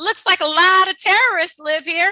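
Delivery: very loud, booming, shrill, high blurted voice. Retelling what Mom said while passing a building, in a very loud voice. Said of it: "in a very loud voice".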